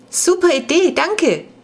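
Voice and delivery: loud, very high-pitched calling out. Jonas answers the mother's suggestion about half-price rides; calling out. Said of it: "rief Jonas".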